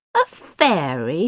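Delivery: scornful, contemptuous, dismissive, drawn-out. A listener answers the narrator's talk of a sand fairy, scornful. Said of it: "said Smash scornfully".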